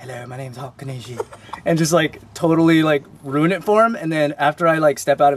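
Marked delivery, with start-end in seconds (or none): 0.0-1.2 very quiet, playful put-on British accent. Imagining stepping into a friend's body to fool people, in a put-on british accent. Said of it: "acting British for fun".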